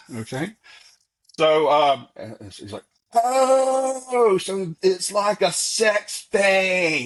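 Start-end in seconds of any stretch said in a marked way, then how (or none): 3.1-7.1 put-on very slow, loud, pitched up, long drawn-out "oh". Retelling a father's remark in a packed theater: imitating someone saying it loudly. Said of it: "he says real loud".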